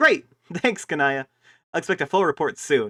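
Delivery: very loud, high-pitched, all-out yelling. Reading Karkat's lines in a dialogue with Kanaya, shouting as Karkat. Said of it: "I just yelled that, and I'm realizing I'm shouting".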